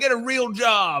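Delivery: very high, slow, drawn-out country-guy holler. Retelling a call where a country guy yelled: imitating a man yelling. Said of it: "one guy yelled at me".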